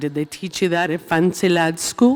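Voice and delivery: put-on loose, rough Scottish accent rattled off quickly. A fan asking a question quotes a favorite line: Bron impression, Scottish-ish accent. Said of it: "Was that a Scottish accent?".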